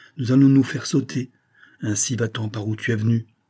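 ordinary delivery

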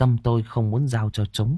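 plain reading voice

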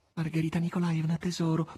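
imploring tone. Natascia, kneeling before Margherita, begs her in a pleading tone. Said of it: "prese a dire Natascia in tono supplichevole".

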